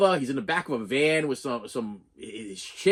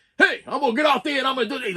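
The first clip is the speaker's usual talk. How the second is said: mock furious outburst, pitched very high; 10 semitones higher, 4 dB louder than usual. Retelling a movie scene from a Porta John: imitating a really mad character. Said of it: "he's getting really, really mad".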